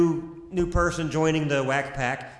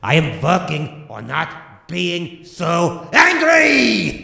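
loud, furious yell, very slow, drawn out, climbing; 7 dB louder than usual. Playing Hans, claiming to work on his anger: loud angry shout. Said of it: "Pretty loud to me".

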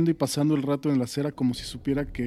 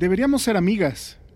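exclaimed outright with raised pitch; 5 semitones higher, 4 dB louder than usual. Mosca, on the first school day, speaking to Stephanie; exclaiming. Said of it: "exclamó Mosca".

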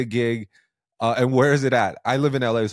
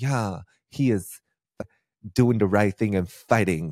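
put-on valley girl news reporter voice; 3 semitones lower than usual. Imagining how a news clip would report a fight, in a valley girl news reporter voice.

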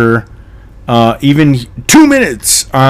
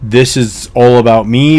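ordinary delivery

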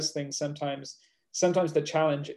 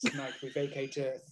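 mock profound tone, quieter; 9 dB quieter than usual. Quoting a friend's sleep talk from a record: imitating a profound way of speaking. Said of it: "he speaks in this really profound way".

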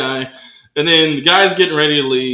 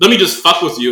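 ordinary talk

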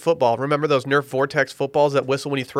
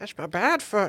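put-on old person voice, much quieter; 6 semitones higher, 7 dB quieter than usual. Joking in a group conversation: old person voice. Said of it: "Why do an old person voice?".

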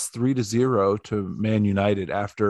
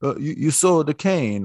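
put-on Italian accent, high and slow; 6 semitones higher than usual. Retelling what a man said to them, in an Italian accent impression. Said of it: "that's my dead-on Italian impersonation".

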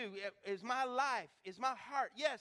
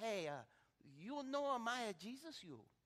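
soft, preachy broken English with jumbled words; 5 dB quieter than usual. Retelling how a man always preached Jesus to people, imitating broken English. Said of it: "he's speaking broken English".

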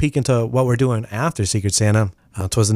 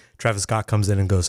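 ordinary talk

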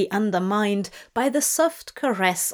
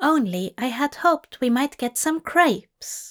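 innocent, much higher; 5 semitones higher than usual. Leaning close to his companion, he adds a remark; innocently. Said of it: "he added innocently".

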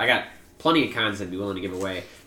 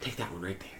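put-on creepy whisper, lower and quieter; 4 semitones lower, 16 dB quieter than usual. Retelling a neighbor offering a Japanese plum: imitating a creepy whisper. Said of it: "Why are you whispering the whole time".

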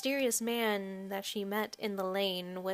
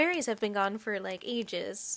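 ordinary talk

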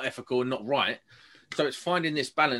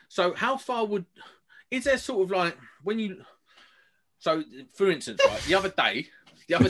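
flustered, pitched-up rambling, tripping over every restart; 5 semitones higher than usual. Asking the others a question about testing: flustered rambling, tripping over words. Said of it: "Take a breath, just take a breath, mate".

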